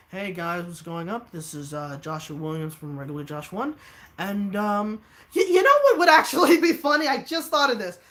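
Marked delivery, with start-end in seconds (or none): 0.1-3.7 flat, level, unvaried monotone delivery. Recalling how he opened his old videos, imitating his old monotone. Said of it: "I was completely monotone, just be like".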